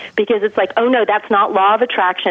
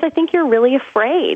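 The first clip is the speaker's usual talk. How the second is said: tender, kindly, gentle, loving tone; 4 semitones higher than usual. Recounting what he told the speaker, quoting him gently and lovingly. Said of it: "he said very gently and lovingly".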